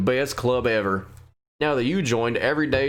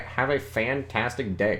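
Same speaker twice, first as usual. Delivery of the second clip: normal talking voice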